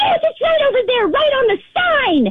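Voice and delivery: high-pitched mock angry yell. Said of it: "she starts freaking out".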